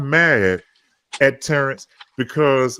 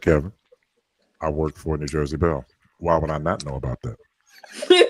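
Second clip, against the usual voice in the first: dry, sarcastic, matter-of-fact, plainly stated tone; 11 semitones lower, 5 dB quieter than usual. Retelling what a friend said in a phone discussion: imitating Terrence's matter-of-fact tone. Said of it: "Terrence always talks like this when he's matter of fact".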